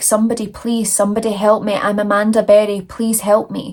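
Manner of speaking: ordinary talk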